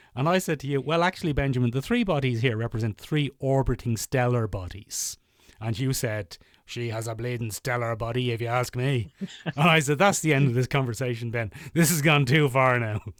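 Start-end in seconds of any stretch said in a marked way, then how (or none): 6.6-9.1 mock-lecherous, leering put-on voice. Speaker retells a chat with his co-host, imitating Ben's lecherous voice. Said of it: "an imitation of your lecherous voice".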